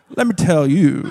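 put-on scheming Southern accent, narrating manner. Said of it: "start speaking with a Southern accent".

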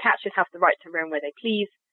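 plain

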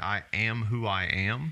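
plain

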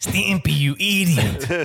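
high cartoon tiny dog voice. Doing the cartoon line after comparing voices: Ren voice. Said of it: "voice as Ren from Ren and Stimpy".

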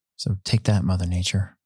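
soft, quiet taunting under the breath. Taunting mother nature about racing indoors despite rain: said quietly. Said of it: "I had to say it quietly".

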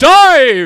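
big, booming, high-pitched shout, word stretched out. Describing a scene with the Hawkmen, speaker acts out Voltan: booming Voltan voice. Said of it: "this big booming voice".

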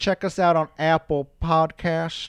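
put-on elderly voice, high-pitched, slow, drawn out. Telling listeners where to find the podcast: put-on old person voice. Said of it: "I feel like I'm an old person saying that".

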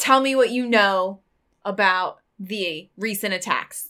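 plain, straightforward calling voice. A player's character yells a demand for information at someone in his bed. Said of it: "And I yell".

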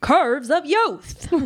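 vintage radio announcer voice. Reading old text aloud on request, in an old-timey radio voice. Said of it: "can you read it in the old timey radio voice?".

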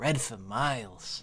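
hushed, low half-whisper under the breath. Playing a character looking around the desert, half-whispering under breath. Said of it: "whisper underneath my breath".

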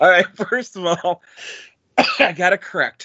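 breathless from laughter while talking. Trying to go on after a fit of laughter: laughing while talking. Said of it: "I'm laughing so hard".

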